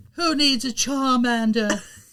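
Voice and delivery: put-on British boy band voice. Retelling an anime scene where a trainer abandons Charmander: imitating Damian's British voice. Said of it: "sound like he was in a British boy band".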